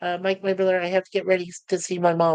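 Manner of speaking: plain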